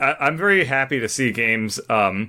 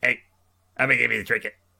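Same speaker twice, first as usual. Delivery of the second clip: rough, creaky, croaking creature voice. Speaker sharing the voice he gave the Bogwins, Bogwin voice. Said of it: "that was the voice I gave to the Bogwins".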